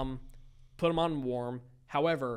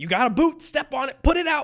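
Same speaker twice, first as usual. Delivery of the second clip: shrill, high, full-volume panicked screaming; 12 semitones higher, 11 dB louder than usual. Retelling the moment a pizza box caught fire, yelling at friends: retelling a scream. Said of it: "I'm just screaming".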